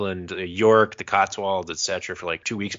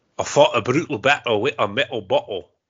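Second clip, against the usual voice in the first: loud, attempted, still-practicing put-on Scottish accent; 4 semitones higher, 5 dB louder than usual. Closing a podcast with a tongue-twister line: attempted Scottish accent. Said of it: "working on my Scottish accent".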